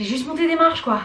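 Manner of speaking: panting, winded, short of breath. Having just climbed the stairs while showing the house, the speaker is out of breath. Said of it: "je suis essoufflée".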